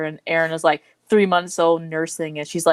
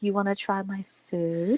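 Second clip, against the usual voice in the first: mock emotional moan on every word, slow, drawn-out; 3 semitones higher, 7 dB quieter than usual. Retelling how an anime character offered her food: imitating a moaning delivery.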